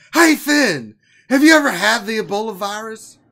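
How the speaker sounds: put-on loud, high, booming old ballgame announcer voice. Putting a question to Finn while introducing the discussion, do a Harry Caray impression. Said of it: "you interrupt Harry Carey?".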